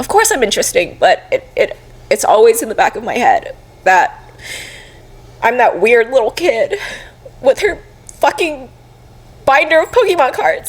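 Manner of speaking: speaking through tears. Speaking to someone who keeps reassuring them, crying. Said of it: "I don't know why I'm crying so much".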